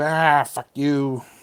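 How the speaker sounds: words hissed out in a creature voice. Game master voicing a creature that hisses at the player, hissing. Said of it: "he hisses at you".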